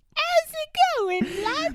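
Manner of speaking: very high, odd, strange, disarming tone. Describing a movie character's greeting, the speaker imitates a high-pitched strange voice. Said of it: "It's very like high pitched and strange".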